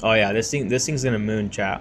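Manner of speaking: sarcastic, ironic enthusiasm, hyped up. Telling chat a coin is about to shoot up: sarcastic. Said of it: "I'm being sarcastic, by the way".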